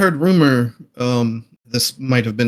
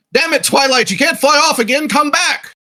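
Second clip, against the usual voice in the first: very high-pitched shouted yell; 3 dB louder than usual. Getting around the corner, the player's character calls to their dragon: yelling to a dragon. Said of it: "I'll yell".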